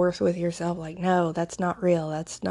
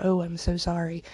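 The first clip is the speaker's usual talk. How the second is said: put-on whispering voice. Retelling a meme where a listener reacts to a childhood story: imitating someone whispering. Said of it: "and then someone whisper".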